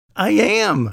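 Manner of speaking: very high, giddy, delighted squeal. Narrator reads a woman answering a man's question; squealed. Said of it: "she squealed".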